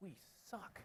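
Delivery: hushed whispered mutter, barely voiced, under breath. Retelling a young engineer's remark nearby: imitating muttering under his breath. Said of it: "under his breath".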